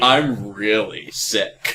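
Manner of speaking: heavily sarcastic tone. Imagining a disease that makes you say everything sarcastically, asking for help, really sarcastic. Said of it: "say everything really sarcastically".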